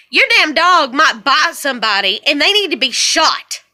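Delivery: normal talking voice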